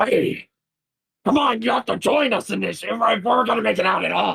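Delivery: muffled, rough, high-pitched yelling. Narrator voicing a super mutant urging others to join the fight: muffled yelling. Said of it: "start yelling in like this muffled uh, voice".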